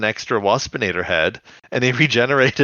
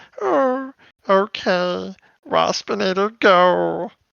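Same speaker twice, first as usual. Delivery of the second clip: most pitiful, very slow, high, drawn-out voice; 8 semitones higher than usual. Recapping a show episode, quoting a character's reply; pathetic Waspinator voice. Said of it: "In like the most pathetic Waspinator voice".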